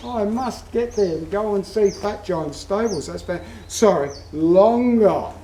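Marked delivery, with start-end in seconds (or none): 0.0-3.0 fast, eager gushing like a tourist. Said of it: "you will look it up and you say".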